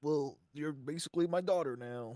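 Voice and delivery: put-on American southern accent, plain delivery. Comparing video game stories, parodying The Last of Us: southern accent, The Last of Us parody. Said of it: "and I got a southern accent".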